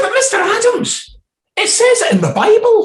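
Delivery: dumb put-on voice, high-pitched and booming loud. Retelling his question to a lecturer from the audience, in a stupid put-on voice. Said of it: "And then dropping the stupid voice".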